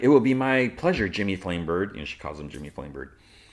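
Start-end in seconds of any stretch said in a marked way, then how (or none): none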